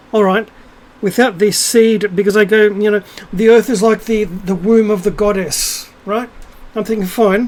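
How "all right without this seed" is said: usual speaking voice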